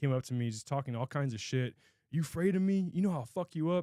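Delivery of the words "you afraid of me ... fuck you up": put-on drunk man voice, higher pitch. Retelling what a drunk man at a bar said: imitating a drunk man. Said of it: "just hammered".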